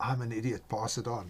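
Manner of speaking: put-on whisper. Speaker retells the youngest son whispering a prank message to Dad, retelling a whisper. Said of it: "He whispers in Dad's ear".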